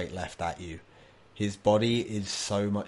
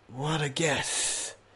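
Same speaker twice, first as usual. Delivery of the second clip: put-on very old man voice, pitched up; 7 semitones higher than usual. Voicing an unbelievably old man answering a player: very old man voice. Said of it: "old man looks at you and goes".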